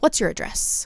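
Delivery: calm, quiet, breathy near-whisper. Imitating a nurse's intake questions, imitating quiet, calm asking. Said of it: "very quietly and calmly asking me".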